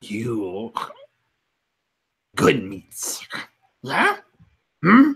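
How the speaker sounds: low lizard creature voice. A game master voices a lizard scavenger checking on a player character, lizard creature voice. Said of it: "where is that lizard?" I think I think at that time you hear [name] um, just scuttling back up the hole uh, as he comes out. Like every pouch that he has is bustling with jerky and weaponry and / as h".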